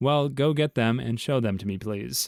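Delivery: plain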